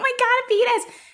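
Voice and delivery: mock screaming and laughing. Recalling middle-school friends on chat roulette, retelling screaming and laughing. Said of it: "Screaming and laughing".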